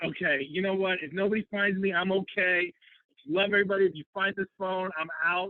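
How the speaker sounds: put-on high, tearful voice, talking through tears. Retelling a video of running away during a silent retreat: imitating own past crying.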